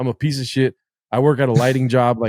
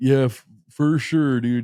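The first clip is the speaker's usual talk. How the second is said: mock sarcastic, unenthusiastic delivery, slower. Retell how the others responded to your podcast idea, imitating a sarcastic, unenthusiastic reply.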